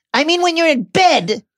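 very high, loud snarling voice. Dudley speaks to Harry, snarled. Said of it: "Dudley snarled".

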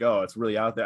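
put-on sarcastic tone. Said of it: "classic sarcasm".

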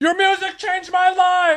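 put-on, very high, shouted-out yell. Retelling a fan yelling between songs at a quiet concert: imitating a Will Ferrell-like yell. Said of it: "yell something out in, like, a Will Ferrell kind of tone".

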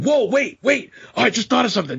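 very high, rushed, over-the-top eager over-excitement. Acting out helping someone, in a put-on, way too excited tone. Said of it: "I'm just like way too excited to help them".

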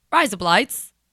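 "razor blades" said with an Australian accent. Saying a phrase that sounds like razor blades: Australian accent. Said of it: "It's razor blades in Australian".

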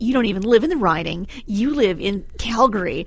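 mocking, snide, snarky tone. Quoting someone's reply from this week in a mock-snarky, snide tone. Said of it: "rather snarkily".

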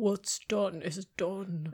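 deep, resonant, low-register cat voice. Retaking a character's line to edit in post, in a deep resonant cat voice. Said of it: "It's like very resonant".

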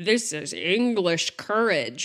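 fake Hollywood-style American accent. Describing a film's prison scene, quoting a line in John Wayne accent. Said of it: "with my John Wayne accent".

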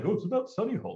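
very high, dopey put-on voice. Mocking a movie about Western Sydney naming a made-up suburb: put-on dumb voice. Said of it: "I shouldn't put on that dumb voice".

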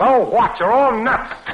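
high, loud yelling. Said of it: "Who was that yelling?".

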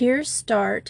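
plain

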